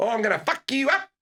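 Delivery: very high-pitched New Zealand accent villain voice. Joking that New Zealanders can't play film villains: New Zealand villain voice. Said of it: "The Kiwis, definitely not".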